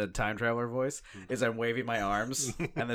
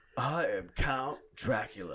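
very slow, drawn-out, stretched words. Imagining an actor playing Dracula coming out of the coffin: Keanu Reeves as Dracula. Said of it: "could you imagine Keanu Reeves".

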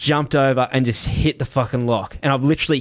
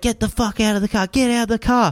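mock, high, full-on screaming; 9 semitones higher than usual. Retelling how a man screamed at them to leave the car: imitating a man screaming. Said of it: "screaming at us".

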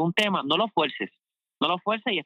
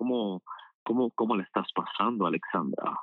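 put-on deep, low, affected would-be-interesting voice; 6 semitones lower, 4 dB quieter than usual. Showing how people change their voice when greeting someone, imitating a put-on deep, interesting voice. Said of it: "ponen voz así profunda, interesante".

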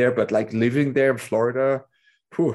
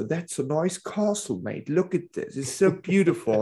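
put-on English accent, pitched up; 5 semitones higher, 4 dB quieter than usual. Telling a joke about nationalities, voicing the Englishman: imitating an Englishman. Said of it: "there's the Englishman coming".

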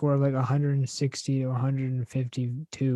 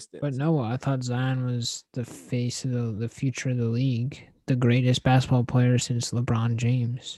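ordinary talk

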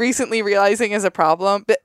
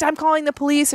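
high, furious, mock angry voice; 6 semitones higher than usual. Retelling a neighbor yelling through a car window: imitating a neighbor screaming. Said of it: "screaming at him".

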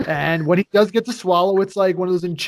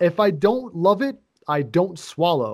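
plain

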